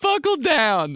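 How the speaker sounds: high, loud, mocking mimic voice.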